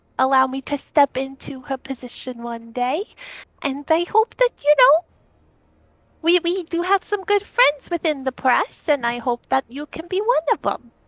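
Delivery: speaking softly in character. Voicing Delphi speaking to Crucial: quiet voice in character. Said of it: "very quietly to him goes".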